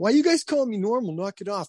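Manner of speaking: very high-pitched, upset delivery. Retelling a reply to the kids: retelling getting upset. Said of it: "I'll start getting upset".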